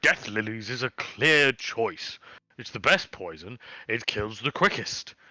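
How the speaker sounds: ordinary talk, nothing marked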